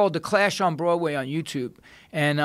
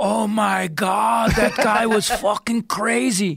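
put-on very slow, high, drawn-out German accent; 5 semitones higher than usual. Retelling what shocked tourists said afterward: imitating German tourists. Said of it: "you heard these Germans go".

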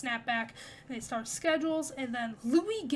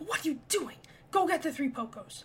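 rough, gruff tone; 2 semitones higher than usual.

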